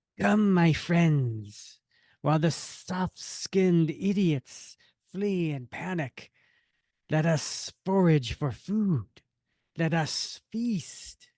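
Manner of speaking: creature voice of a rat beast. Showing how he did the voice back in episode thirty-two, Man Rat voice. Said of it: "that's how I did the voice".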